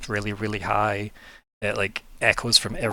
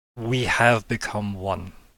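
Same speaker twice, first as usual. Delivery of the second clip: faintly unearthly, eerie, slightly otherworldly delivery. Voicing an echoing presence at the end of the session: slightly otherworldly voice. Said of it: "slightly otherworldly voice just say".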